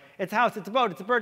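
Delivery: rattled-off, nonstop delivery. Showing how they guess at Pictionary, talking as fast as possible. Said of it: "I just keep talking as fast as I can".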